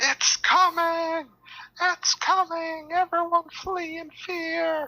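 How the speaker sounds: shrill, very high, slow, stretched-out yelling. Voicing a farmer bursting into a tavern: yelling farmer. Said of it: "break into the tavern and yell".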